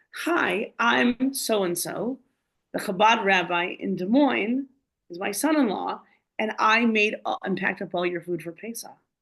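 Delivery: put-on speaking in a British accent. Retelling what a woman said as she ran over and hugged the speaker, british accent. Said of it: "British accent".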